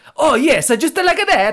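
put-on high, loud Italian accent.

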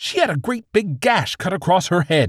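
snapped-back, very high-pitched line. The police chief berates a detective over an injured witness, snapping. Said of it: "Meriden snapped".

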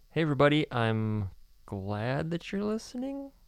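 disappointed, unsure tone. Asked to demonstrate a disappointed tone, greeting everybody listening in a disappointed tone. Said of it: "let me hear your disappointed tone".

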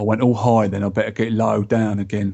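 London cockney accent. A host wraps up a segment before reading feedback, cockney accent. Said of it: "you've gone all cockney again".

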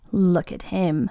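scornful, dismissive, contemptuous. The last Roog speaks about Boris at the fence, with contempt. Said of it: "the last Roog said with contempt".

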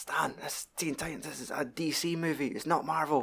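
hushed, soft half-whisper with no voice. Retelling an animated movie scene, a line someone says: imitating a half-whisper. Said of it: "And somebody whispers, like".

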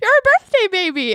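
full-on dead serious tone, pitched very high. Retelling a friend's mistaken remark: imitating a friend, dead serious. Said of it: "just full on serious".

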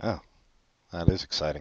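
deadpan, flat, soft, no enthusiasm at all. Responding to a co-host's holiday plans, the host answers sounding unexcited. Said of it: "You don't sound so excited".

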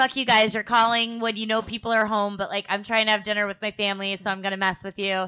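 ordinary talk, nothing marked

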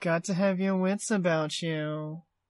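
slow, drawn-out, sneering delivery. Repeating a favorite movie line, imitating Filch sneering. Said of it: "that sneer he makes".

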